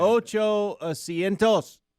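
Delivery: attempted Spanish accent. Saying the Spanish word for seats aloud, trying a Spanish accent. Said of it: "now he's trying to have an accent and everything".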